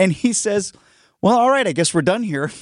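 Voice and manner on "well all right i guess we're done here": mock passive-aggressive tone, higher. Retelling what a friend said about being ignored for texting: imitating a passive-aggressive remark. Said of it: "Very passive aggressive".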